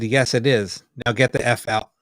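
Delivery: plain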